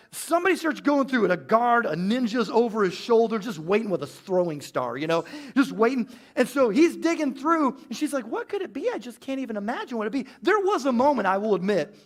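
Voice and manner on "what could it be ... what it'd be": put-on oblivious, clueless voice. Retelling his mom at a metal detector in her clueless voice. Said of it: "the voice I'm gonna use for my mom".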